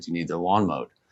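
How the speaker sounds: plain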